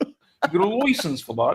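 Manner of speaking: bad put-on Australian accent, pitched high. Joking around with others, in a terrible Australian-sounding accent. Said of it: "these are terrible accents we're doing right now".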